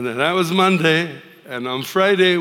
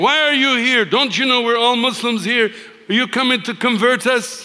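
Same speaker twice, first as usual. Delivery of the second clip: play-acted outraged, high, furious screaming; 8 semitones higher than usual. Retelling how an angry lady in the park confronted the group: imitating someone screaming. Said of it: "She started screaming".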